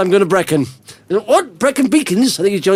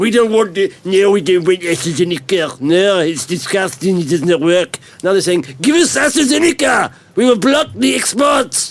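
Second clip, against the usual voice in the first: partial, not quite right put-on French accent. Voicing europe on astrazeneca exports, the speaker uses a put-on french accent. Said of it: "You've been practicing your French accent".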